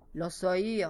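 plain

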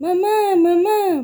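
high, loud shouted call. Reading a young mouse calling out as he runs to his mother, shouting. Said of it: "Gritou o Rodrigo".

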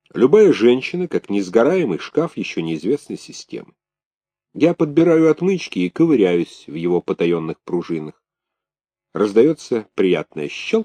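ordinary delivery, nothing marked

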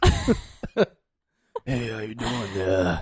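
soft, scratchy, raspy smoker's voice like a radio DJ. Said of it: "that's what they sound like".

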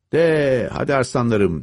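rousing, high-pitched shout. Seryoga swings his whip to drive the horses on, shouting. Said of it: "diye bağırdı".

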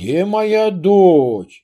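searching tone with дочь drawn out. A father looks for his daughter hiding under a blanket, loud question. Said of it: "громко спрашивал Платон".

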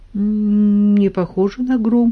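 uncertain. Narrator reads Kolya answering Kuzya's frightened question, uncertain answer. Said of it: "неуверенно ответил Коля".

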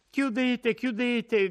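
very high crying out. Reading a story aloud, a character calls out to an old woman; shouting. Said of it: "gridava Lucia".

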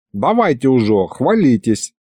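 ordinary delivery

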